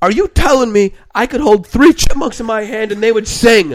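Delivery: shrill, very loud scream at the top of the lungs. Retelling how his dad screamed a question at him in the car: retelling a scream. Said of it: "he was screaming at the top of his lungs".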